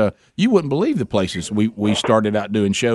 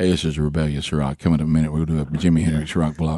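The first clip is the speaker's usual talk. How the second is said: put-on laid-back DJ voice, lower; 9 semitones lower than usual. Trying to sound like a radio DJ they used to work with: laid-back Blaze Man DJ impression. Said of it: "you could lay back like".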